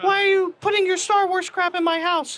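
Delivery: put-on voice pitched very high. Picturing a wife objecting to décor hung at home: imitating a wife. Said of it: "I do a great wife impression".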